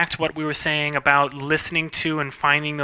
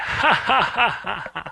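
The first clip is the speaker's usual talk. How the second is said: very slow, drawn-out animated laugh swooping up high; 5 semitones higher than usual. Explaining how to animate a laugh, the speaker acts it out: acting out an animated laugh. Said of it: "Animating a laugh".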